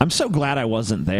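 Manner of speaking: usual speaking voice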